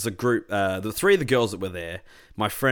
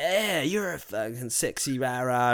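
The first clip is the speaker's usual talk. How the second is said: put-on sleazy voice, much slower; 4 semitones higher, 3 dB quieter than usual. Retelling what a huge guy said to the speaker, imitating a sleazy guy. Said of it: "real like sleazebag stuff".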